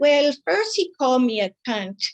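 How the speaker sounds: imitated Spanish accent. Quoting a woman's answer about what happened: imitating a Spanish accent. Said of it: "she also kind of had the Spanish accent".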